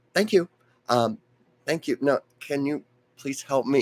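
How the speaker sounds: mock courteous, very polite, nice-as-can-be tone. Retelling a meeting, imitating Gilda's thanks: very polite. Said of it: "I wanna emphasize very polite".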